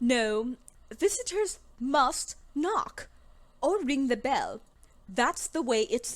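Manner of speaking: fake stuck-up British accent. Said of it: "turning British".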